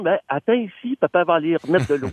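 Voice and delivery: plain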